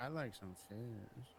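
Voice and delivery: put-on sultry tone. Teasing a friend about how they said a remark: mock-sultry. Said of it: "you said it like kind of like sultry".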